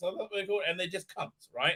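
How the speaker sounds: normal talking voice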